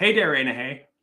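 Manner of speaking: Milwaukee way of talking. Showing how people talk when they go heavy on it: Milwaukee way of talking. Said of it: "that's Milwaukee".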